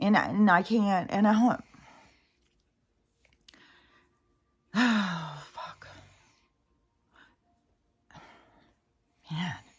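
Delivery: choking up, slow, near tears. Talking about a personal struggle, choking up. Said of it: "if I'm gonna cry, I'm gonna cry".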